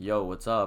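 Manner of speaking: usual speaking voice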